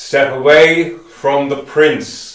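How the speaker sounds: very loud, thundering, booming voice. Game master voices a figure calling out from behind the party: booming voice. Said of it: "a booming voice comes from behind you all".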